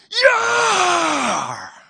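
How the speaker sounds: shrill, booming battle cry, stretched long, belted out. Showing how a yelling parent sounds to kids: imitating a Viking yell. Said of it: "A Viking yell".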